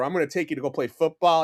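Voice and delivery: ordinary talk, nothing marked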